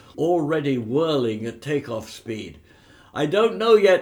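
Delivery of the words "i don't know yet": very loud shout, pitched up. The pilot answers the narrator over the din of the twin motors: shouted back. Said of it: "the pilot shouted back".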